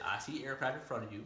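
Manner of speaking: normal talking voice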